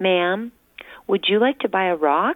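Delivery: little voice. A boy speaks up to a woman nearby: little voice. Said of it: "I heard a little voice ask".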